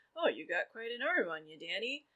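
very creepy, unsettling tone. Recapping a scene where Peter watches Danny playing catch, Peter's creepy voice. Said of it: "in his very creepy way".

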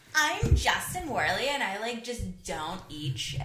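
very loud, swooping sing-song mocking mimicry. Speaker mimics the other person after being teased: mocking Justin Werley impression. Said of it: "you're using the voice that I use".

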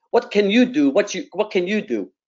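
put-on Greek accent. Retelling a man's reply to an offer of help, in a Greek accent. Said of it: "he says to me in this Greek accent".

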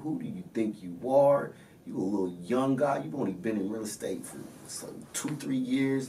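put-on furious yelling. Retelling how a man blew up on the phone over a list: retelling a yell. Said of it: "he's yelling at me on the phone".

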